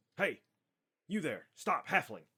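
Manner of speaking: very high, very loud shout. Narrating a game scene as a guard spots a halfling, guard calling out. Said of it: "one of the guards goes".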